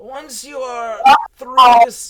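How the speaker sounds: very loud, booming, ancient village elder voice. Storyteller voicing the village elder giving the party directions, old village elder voice. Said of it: "So, you guys arrive at the village elder's house, and you see a old-ass man. / So, you guys arrive at the village elder's house, and you see a old-ass man. Bald, Old. long Santa Claus-looking beard. Y".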